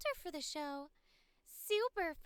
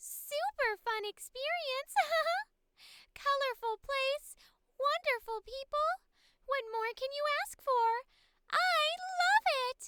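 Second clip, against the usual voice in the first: put-on small, high, loud girlish character voice; 6 semitones higher, 6 dB louder than usual. Voicing a happy artist character, in a little high-pitched girl voice. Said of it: "it's just my little high pitched girl voice".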